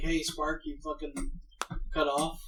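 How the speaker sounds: ordinary talk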